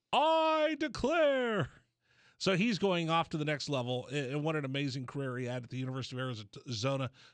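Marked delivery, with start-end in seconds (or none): 0.1-1.7 shrieked, very high, loud scream. Joking about how a player should declare for the draft: screaming like Michael Scott. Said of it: "declare by screaming like Michael Scott".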